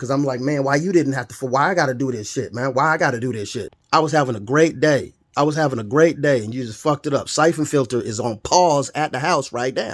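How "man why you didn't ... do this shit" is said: imitated angry, ranting voice. Retelling getting mad at whoever hit the deer: imitating getting mad. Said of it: "now I'm getting mad at the motherfucker who hit him".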